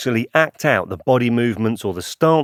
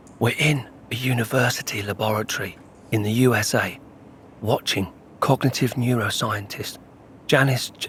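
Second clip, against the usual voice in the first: slow, hushed whispered narration; 5 dB quieter than usual. Describing being in a university laboratory to make it realistic: whispering. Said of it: "Why am I whispering?".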